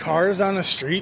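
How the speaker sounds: ordinary delivery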